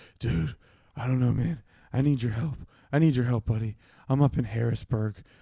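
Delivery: put-on low whisper. Retelling a late-night call from a buddy hiding: imitating someone whispering. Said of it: "he's talking like this, like, real silent".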